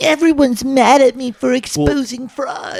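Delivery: very high whining, whiny tone, way up high. Imitating a man the others call whiny: whiny Nick Shirley imitation. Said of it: "he sounds so fucking whiny".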